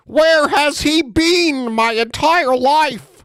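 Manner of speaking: high, slow, swooning mock Canadian accent. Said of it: "God with a Canadian accent".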